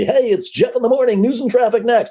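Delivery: very high, upbeat, over-the-top radio DJ announcer voice. Showing what you don't have to be, over-the-top radio DJ voice. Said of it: "over the top like a radio D J".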